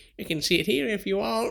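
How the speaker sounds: high, small wee voice. Retelling a moment on the bus, quoting child Jenny in a tiny wee voice. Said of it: "this wee voice being like".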